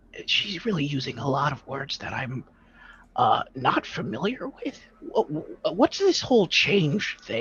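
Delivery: half-whispered stage-whisper aside. In character, tied up in a clump with others, half-whispering over to them. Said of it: "I'm kind of whispering over".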